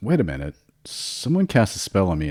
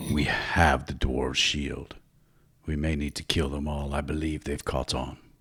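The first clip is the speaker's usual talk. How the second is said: muttering, much lower and quieter; 2 semitones lower, 7 dB quieter than usual. A game master voices a character speaking toward a wagon, said under his breath. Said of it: "under his breath".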